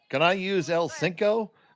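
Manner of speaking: very slow, high, American-accented Spanglish. Giving an example of how Americans try to speak Spanglish: imitating Americans speaking Spanglish. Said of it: "the classic way a lot of Americans try to speak Spanglish".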